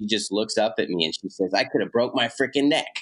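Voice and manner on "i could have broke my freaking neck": mock indignant, annoyed, pitched-up grumble. Retelling what Mom said after falling into the creek bank: imitating an angry mom. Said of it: "And so mad".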